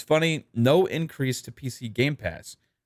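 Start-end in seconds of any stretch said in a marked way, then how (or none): none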